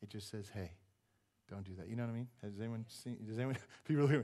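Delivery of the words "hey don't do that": still, small, very soft, low, hushed voice. Describing how the Spirit speaks, acting it out in a still, small voice. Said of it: "that still, small voice".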